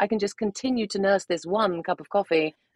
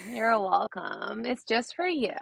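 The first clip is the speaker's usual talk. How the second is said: put-on Valley Girl accent, quieter; 3 semitones higher, 3 dB quieter than usual. On a podcast, a guest puts on her accent for the host: Valley Girl accent. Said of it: "Very, very LA".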